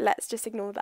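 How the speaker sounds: ordinary delivery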